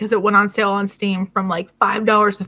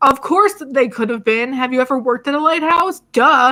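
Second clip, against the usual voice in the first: acted loud yelling; 4 semitones higher than usual. Retelling watching a show about a lighthouse: imitating own past yelling. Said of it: "yelling at the screen".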